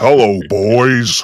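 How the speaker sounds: loud, put-on, beefed-up macho voice. Joking about drinking testosterone first, then greeting: put-on testosterone-fueled voice. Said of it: "drink some testosterone".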